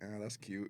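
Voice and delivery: put-on unimpressed tone. Retelling a phone call, imitating Jay's unimpressed tone. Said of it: "the tone of your voice was like".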